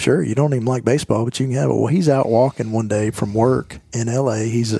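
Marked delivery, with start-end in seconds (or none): none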